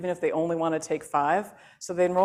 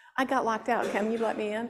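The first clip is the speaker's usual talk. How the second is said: mock snooty, snotty, entitled-sounding tone; 5 semitones higher than usual. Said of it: "that sounded pretty snotty".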